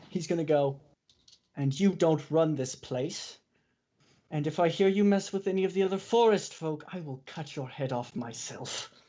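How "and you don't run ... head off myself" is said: dead-serious, menacing, threatening tone. Glaring at a snake and threatening to cut its head off: dead glaring, threatening. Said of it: "dead glaring at this snake".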